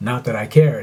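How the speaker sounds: plain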